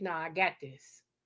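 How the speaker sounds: slow, put-on firm tone that sounds final. Retelling a moment with her husband: imitating husband's don't-argue tone. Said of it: "That's the tone you don't buck".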